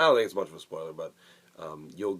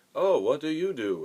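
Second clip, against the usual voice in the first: very high-pitched, loud, clumsy-sounding voice; 10 semitones higher, 5 dB louder than usual. Retelling a movie scene where a character walks up: worst Jake Gyllenhaal impression. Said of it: "the worst Jake Gyllenhaal impression I could have ever done".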